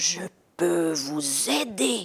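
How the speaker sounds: big, deep, hollow, cavernous voice. Narrator reads a voice breathing into Maïcha's ear, big cavernous voice, breathed. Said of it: "souffle une grosse voix caverneuse".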